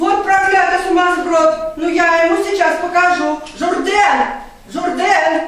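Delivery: shouting. Hearing that Jourdain refused the suitor, a woman calls out for him: shouting. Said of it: "что ты кричишь".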